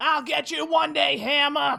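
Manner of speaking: put-on loud, high-pitched, full New Jersey accent. A player's character reacting while falling into a pit, New Jersey accent. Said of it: "Gone with the Jersey accent".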